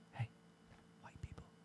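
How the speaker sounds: whispered aside. During a group argument about an accent, whispering an aside. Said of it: "nobody can hear you when you whisper".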